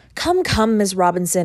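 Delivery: ordinary delivery, nothing marked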